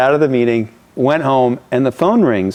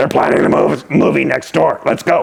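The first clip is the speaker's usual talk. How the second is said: gruff, rough voice with creaky edge. Retelling what a man said to him about planning a movie, imitating a gruff voice. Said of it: "He had a gruff voice".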